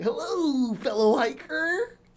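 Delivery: high-pitched cartoon dinosaur mascot voice. Pretending to greet hikers in the woods: Barney the dinosaur voice. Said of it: "That goth girl sounds like Barney the dinosaur".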